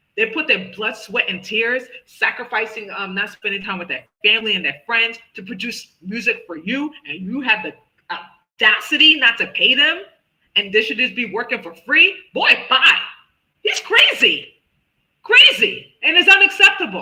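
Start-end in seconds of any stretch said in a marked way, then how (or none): 8.1-17.1 loud raised voice, climbing, swooping, and building. Speaker vents to listeners, later apologizing for it: getting loud. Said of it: "I'm sorry I'm getting loud".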